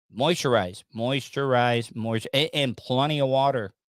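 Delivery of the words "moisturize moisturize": normal talking voice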